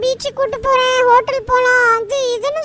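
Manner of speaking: normal talking voice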